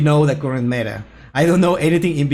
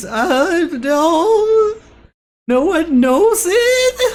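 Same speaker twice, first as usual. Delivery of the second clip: annoying cartoon voice, much higher, slower. Repeating a video host's line the way he does it, in the annoying Rick and Morty voice. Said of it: "does the annoying, like Rick and Morty voice".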